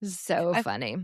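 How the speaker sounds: ordinary talk, nothing marked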